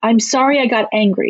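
ordinary delivery

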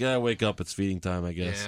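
nonchalant, indifferent delivery. Mocking how a wrestler said his entrance line, mock-nonchalant delivery. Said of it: "he said his line so nonchalant".

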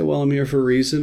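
normal talking voice

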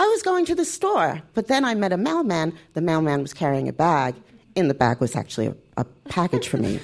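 pitch dropping a note with each new clause.

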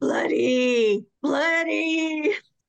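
high, screechy, scary pirate voice. Speaker retelling a man's voice heard in the ear, in a screechy scary pirate voice. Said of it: "a scary pirate kind of a screechy voice saying".

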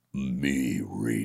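dark, menacing, ominous big-shark voice, deep and scary. Retelling a first line at a table read for a big shark: ominous deep scary voice. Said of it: "ominous and deep and scary".

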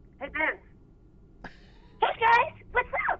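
jumping way up into very high character voice. Answering a request to put the character on the phone: voicing the character Bev. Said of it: "put Bev on the phone".

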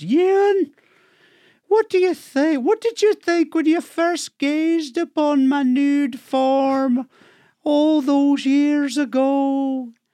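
put-on very high, slow, strong Scottish accent. Telling a joke heard on Outlander, voicing the wife: Scottish accent. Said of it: "told in a very Scottish accent".

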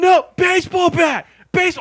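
very high, very loud, frantic screaming. Retelling watching someone play a game: retelling a scream. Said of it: "And I'm screaming".

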